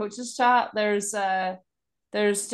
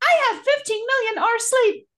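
very high-pitched put-on voice; 14 semitones higher, 4 dB louder than usual. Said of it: "And I usually said it in that voice".

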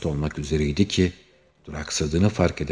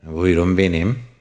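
smirking, suppressed laughter, louder; 2 semitones higher, 6 dB louder than usual. Answering an anxious caller, he replies; smirking. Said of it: "bıyık altından gülerek cevap verdi".

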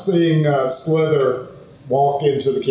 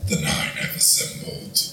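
rumbly voice, quieter. Narrating the story, the speaker voices a terrified character speaking: rumbly voice. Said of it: "in the same rumbly voice from the dream".

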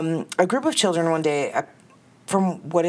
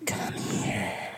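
quiet, hoarse whisper; 9 semitones lower, 9 dB quieter than usual. Telling a spooky tale, voicing a woman beckoning from the darkness, slightly raspy. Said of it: "that sounded a little raspy".

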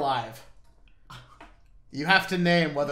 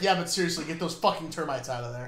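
normal talking voice

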